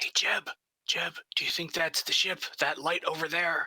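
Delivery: hushed whisper. Speaking in character to jeb about a light far away: whispering. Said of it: "You don't have to whisper".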